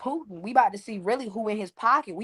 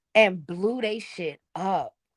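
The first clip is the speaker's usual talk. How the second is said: plain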